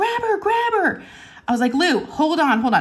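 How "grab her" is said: put-on crying scream, much higher pitch. Telling a story and quoting a woman who screamed at them, retelling a crying scream. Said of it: "she's screaming at me".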